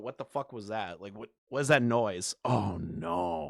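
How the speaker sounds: acted, very quiet, jumpy, startled, hushed muttering. Describing a streamer jolting at a noise: imitating a startled reaction. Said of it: "jolt a little bit, go".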